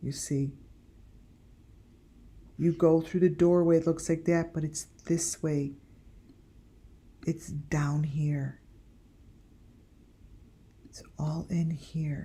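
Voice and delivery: hushed whisper. Showing the way through a doorway to box number five, whispering. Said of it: "I don't know why I'm whispering".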